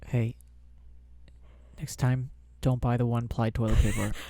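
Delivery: whispering. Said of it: "what if they're pooping?".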